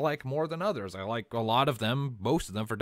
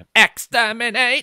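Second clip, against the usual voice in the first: shrill, very loud, high full-blast scream; 9 semitones higher, 14 dB louder than usual. Joining others quoting a favorite villain: loud Dalek voice. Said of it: "doing a Dalek voice, you do tend to go loud".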